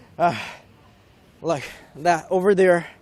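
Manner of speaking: catching breath. Speaker pointing out a sight while walking, out of breath. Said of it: "I need to catch my breath".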